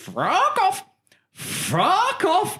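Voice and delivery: very high, swooping, very slow drawn-out parrot squawk. Retelling a pub visit, imitating a shouting parrot. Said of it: "a fucking parrot shouting at me".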